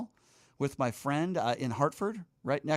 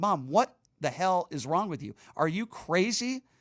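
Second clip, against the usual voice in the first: red-faced, angry, exasperated outburst; 3 semitones higher than usual. Retelling what he said to his mom: retelling his own angry words. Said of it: "I'm angry. I'm getting red in the face".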